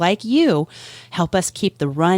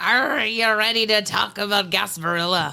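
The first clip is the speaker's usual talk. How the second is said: terrible put-on pirate accent; 3 semitones higher than usual. Podcast co-host opens the episode, terrible pirate accent. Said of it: "I don't know why I had an accent".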